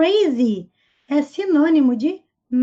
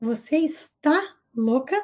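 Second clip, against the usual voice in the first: ordinary delivery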